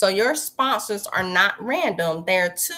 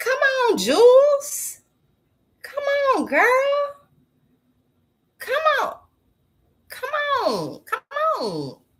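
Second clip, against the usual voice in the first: very high, swooping sing-song call, name drawn out; 3 dB louder than usual. Recording a vlog, urging someone on: yelling. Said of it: "let me stop yelling at her".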